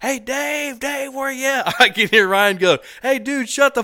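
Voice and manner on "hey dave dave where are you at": very high, loud hollering yell. Retelling a story, the speaker acts out a guy calling out again: imitating someone yelling. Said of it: "he yells again".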